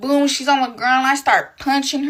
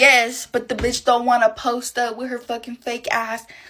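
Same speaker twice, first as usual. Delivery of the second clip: ordinary talk, nothing marked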